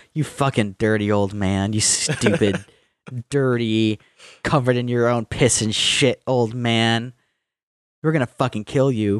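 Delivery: mocking insulting tone. Retelling how someone mocked a man to his face, acting out mocking insults. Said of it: "literally making fun of Stalin to his face".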